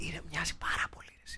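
soft whisper. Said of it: "μπορούμε να μιλάμε πιο σιγά".

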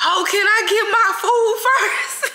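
shrill, very high, loud yelling outburst. Retelling answering the DoorDash driver who asked for a good rating: retelling a yell.

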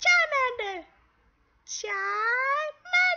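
shrill, very high, very loud creature-like squeal. YouTuber doing Pokemon voices for a video, starting with: Charmander voice. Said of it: "Today I'll be doing Pokemon voices".

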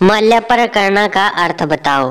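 plain

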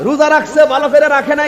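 calling out sharply, high and loud.

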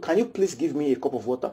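soft, low, courteous voice with plain good manners. Speaker contrasting courtesy with begging, a polite request. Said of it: "That's courtesy".

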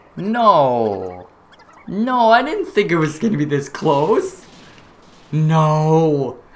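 pained, distressed.

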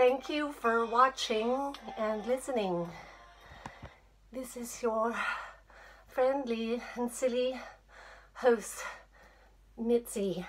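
soft, breathless, out-of-breath panting. Host signs off after lifting up and down for camera angles: out of breath, panting. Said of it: "I'm panting".

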